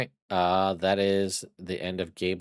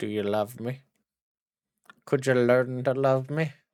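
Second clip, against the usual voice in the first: put-on lovesick, lovestruck character voice; 4 semitones higher than usual. Voicing a creature who turns to a player and asks for love: voicing Old Greg. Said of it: "He he turns and he looks at you and he goes".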